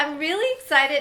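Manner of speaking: voice cracking. Telling viewers about an unboxing, voice cracking. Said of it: "my voice is cracking".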